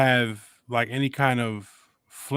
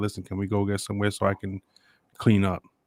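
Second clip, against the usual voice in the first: mock whispering, lower pitch; 4 semitones lower than usual. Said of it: "You could easily have whispered to me and said".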